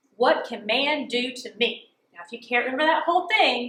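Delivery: ordinary delivery, nothing marked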